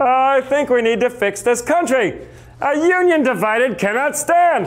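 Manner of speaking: high voice spoken through the nose. Imagining Lincoln in a modern TV debate, high nasal Lincoln voice. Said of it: "Lincoln had a high-pitched, nasally voice. ... He'd be like".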